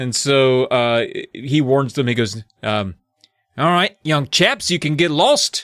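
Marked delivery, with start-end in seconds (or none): 3.6-5.6 put-on Australian accent with raised pitch. Retelling a book character's warning to the kids: Australian accent. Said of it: "That's gonna be Australian. I know no other way".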